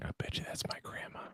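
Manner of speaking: hushed, very quiet, whispered aside. Making a bet so that she doesn't hear, whispered. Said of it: "I'm gonna whisper this so she doesn't hear me".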